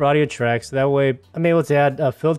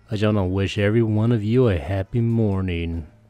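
exaggerated sexy close-mic voice, much lower; 4 semitones lower than usual. Greeting listeners with mouth right up against the mic: exaggerated sexy close-mic voice. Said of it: "putting my mouth right up against the mic just to get that sexy voice".

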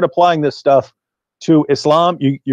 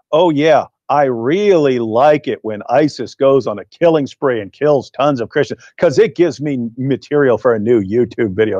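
sarcastic, put-on sincere, fake-agreeing tone. Speaker retelling what they said after getting up, retelling a sarcastic remark. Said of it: "sarcastically said".

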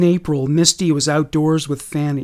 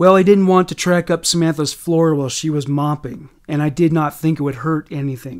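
plain

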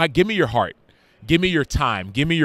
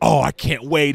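mock thrilled, can't-wait eager, excited tone. Retelling how the youngest son reacted to the cake: imitating an excited son. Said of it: "He was excited".

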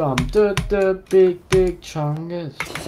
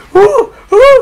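very high, loud screaming. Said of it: "Do the Kino's reaction".

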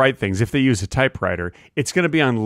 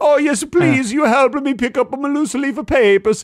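very high, sweet, little man's put-on Italian accent; 12 semitones higher than usual. Acting out the writer accepting help with his papers: put-on Italian man voice. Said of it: "sweet little Italian man".

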